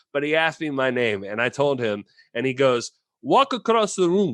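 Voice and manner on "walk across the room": very bad put-on Italian accent, high pitch. Retelling a director asking them to walk across the room, very bad Italian impersonation. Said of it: "I'm going to do a very bad Italian impersonation".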